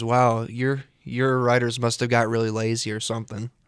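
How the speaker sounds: ordinary delivery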